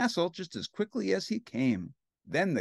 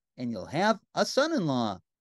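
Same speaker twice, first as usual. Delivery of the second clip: usual speaking voice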